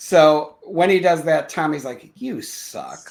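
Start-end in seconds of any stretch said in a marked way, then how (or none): 2.2-3.1 low mutter under the breath. Retelling a student's line to a teacher: imitating muttering under breath. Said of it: "Under his breath".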